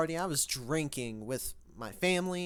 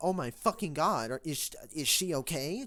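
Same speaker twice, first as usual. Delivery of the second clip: put-on panicked voice. Retelling the moment they heard the news, imitating own past panic. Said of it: "Just panicking".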